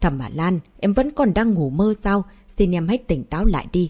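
ordinary delivery

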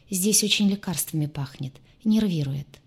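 plain

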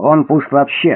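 plain

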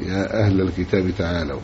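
plain

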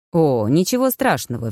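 ordinary delivery

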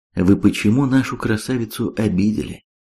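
plain

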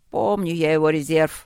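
grumbled, grumbling. Starov speaks while others wait for the discussion to end; grumbling. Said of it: "проворчал Старов".

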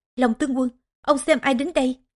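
ordinary delivery

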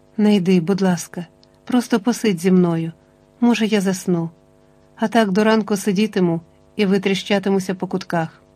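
ordinary delivery, nothing marked

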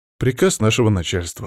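ordinary delivery

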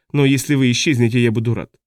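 ordinary delivery

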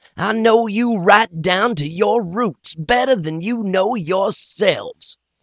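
very high, bull-like roaring shout of fury. An accused doctor taunts the crowd set on killing him, roaring with rage. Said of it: "Then, the doctor give his own testimony. "Gentlemen," he says, "it is true that I come down here to try out that stuff in the bottle there. / You are going to kill me, he said. / The doctor acted as h".

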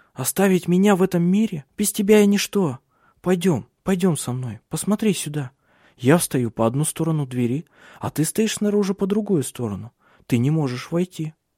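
feverish chattering. A woman pleading with a man to keep him with her, feverish chattering. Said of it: "Она лихорадочно болтала".

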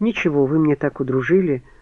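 ordinary delivery

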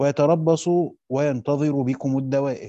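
ordinary talk

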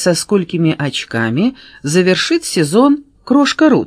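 ordinary delivery

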